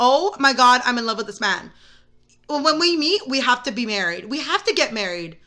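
ordinary talk

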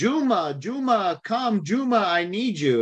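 high, wailing demon voice calling out. Recounting a demon speaking through a girl, calling for the witch doctor: demon voice crying out. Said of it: "the demon's crying out and saying".

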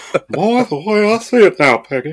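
cartoon father voice, put on. After a botched impression, the speaker jokes on; Hank Hill voice. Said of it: "that sounded more like Hank Hill".

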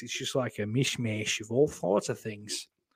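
slight Australian accent creeping in. Admitting to being high during the show, rambling: slight Australian accent. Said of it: "Went a little Australian there".

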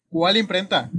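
put-on forceful, thick regiomontano Monterrey accent. Voicing a surprised character asking about the printing press: loud Monterrey-accented tone. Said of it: "con un tono muy fuerte, muy regiomontano".

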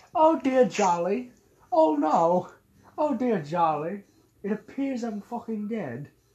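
put-on British woman voice and accent. Teasing someone about their noises, then doing a british woman accent. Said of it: "like a British woman on a pogo stick".

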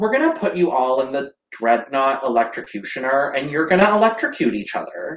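play-acted dry, straight-faced, explanatory tone. Recapping an episode, the speaker quotes a line: mock-deadpan Drax delivery. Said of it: "Just like deadpan".

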